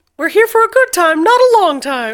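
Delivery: high-pitched cartoon mouse voice. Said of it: "[name] has been doing Mickey Mouse voice".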